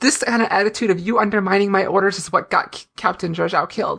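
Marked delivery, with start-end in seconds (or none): none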